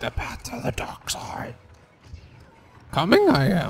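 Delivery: breathy whisper in a character voice. Playing as a game character after another player says do it: Yoda voice. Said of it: "I can be Yoda".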